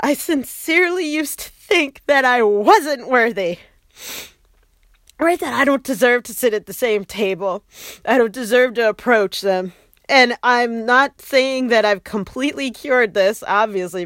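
tearful, words pushed out while crying. Speaker opening up about having felt unworthy: crying while speaking. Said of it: "because I'm crying".

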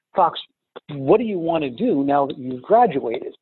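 normal talking voice

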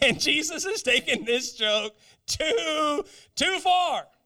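slow mock speech broken up by laughter. Acting out the disciples as Jesus gives thanks: imitating disciples laughing while talking. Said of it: "the disciples have to really be laughing, going".

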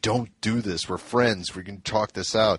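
plain

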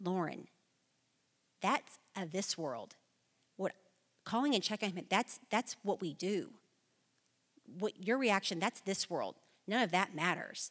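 firm, stern, serious tone with no give. Retelling a phone call where the husband answered: imitating a stern reply. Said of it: "very sternly said".

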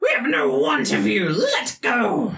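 very high, awful, shrill, swooping creature screech. A taloned creature clinging to a person's arm speaks, awful screeching voice. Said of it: "in this awful screeching voice".

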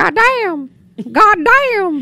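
put-on Southern drawl, very high, loud, slow. Retelling what locals in North Carolina would say: imitating a Southern accent. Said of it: "I fell in love with the Southern accent".

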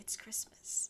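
re-enacted whisper. Recalling watching Hustlers alone in the theater: retelling a whisper. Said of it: "I whispered to myself".

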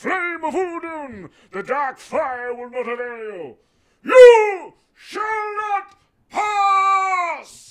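very high, very loud, very slow, drawn-out bellow. Performing Gandalf fending off the Balrog, on request: Gandalf impression. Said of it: "Do your Gandalf impression".

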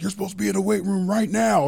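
put-on high, rough, barked yell in a Cajun accent. Retelling a first phone call from a coach: imitating Coach O yelling in Cajun. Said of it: "he's all the Cajun talk and he's yelling at me".

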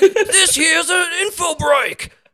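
put-on very high, broad Australian accent. Imagining how an australian man could have sounded, broad australian accent. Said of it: "he didn't have like a cooler accent".

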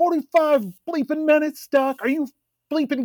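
play-acted furious outburst, very high-pitched and loud. Acting an alcoholic construction worker kept waiting forty-five minutes: blowing up angrily at doctors. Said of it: "instructed to just blow up at them".

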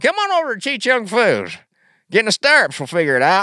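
put-on very high, loud, swooping rural Southern accent. Acting out a made-up gynecologist's ad, in a redneck accent.

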